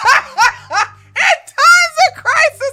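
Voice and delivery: high, slow, loud laughing through the words. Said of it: "I can't even finish this without laughing".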